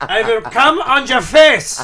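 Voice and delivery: put-on German accent, loud and high-pitched. Riffing on a crude joke, the speaker delivers the line in a german accent. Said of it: "speak with a German accent".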